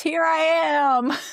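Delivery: mock piercing, very high, shrieking scream. Recounting a show, the speaker acts out a woman calling out alone on a climb: imitating someone screaming. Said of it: "She even screams".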